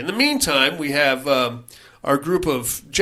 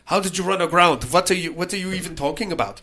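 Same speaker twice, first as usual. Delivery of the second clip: put-on German accent, put on; 4 semitones higher than usual. Retelling a story about a stranded crew, voicing a man in a German accent. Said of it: "doing his best German accent".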